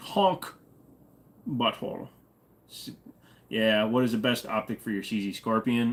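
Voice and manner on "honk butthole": quick, pitched-up, put-on Scottish accent on "honk". Streamer taking a chat request to say honk: scottish accent. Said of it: "Say honk in a Scottish accent".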